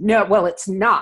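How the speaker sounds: acted, very stern, short and terse delivery. Retelling what a woman said after an apology: imitating a stern reply. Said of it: "very sternly said".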